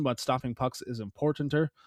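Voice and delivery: ordinary talk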